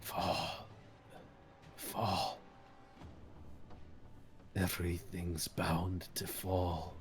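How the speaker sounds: ancient, frail, very hushed, barely-there whisper. Narrator voicing a character hanging limp, speaking one more time, in a whisper. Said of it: "as he whispers one more time".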